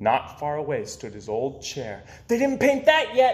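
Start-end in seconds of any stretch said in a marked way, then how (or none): 2.3-3.3 high, shouted, yelled outburst. Peter, seeing his old chair not yet painted, cries out: shouting. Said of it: "Peter shouted".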